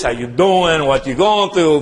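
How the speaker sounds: put-on working-class Italian town accent. Describing the working-class town they grew up in, showing how everybody talked: Italian working-class town accent. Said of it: "everybody talk like this".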